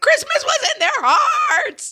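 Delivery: mock exasperated, fed-up shriek, very high and loud. Retelling explaining Christmas to her children, retelling shrieking at her children. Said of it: "it basically ended with me shrieking".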